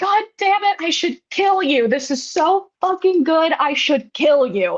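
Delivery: put-on scream. Retelling a movie scene where Pascal tastes the food: imitating Pascal screaming. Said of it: "Pascal literally screams because the food is so good".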